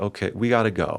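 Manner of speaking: put-on flat-toned delivery. Retelling what a woman in a film said to Henry: imitating a flat delivery. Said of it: "very flat with him and whatever".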